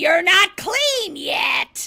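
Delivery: loud, high, slow drawn-out slasher-villain voice. Retelling a scene where the grandma sits up and speaks: Freddy voice. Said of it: "with a Freddy voice saying".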